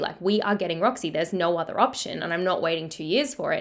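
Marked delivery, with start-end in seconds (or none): none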